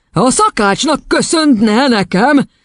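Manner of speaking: ominous, menacing, pitched very high. Reading a story, the headmistress answers a confused boy in a menacing voice. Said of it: "Szólt vészjósló hangon az igazgatónő".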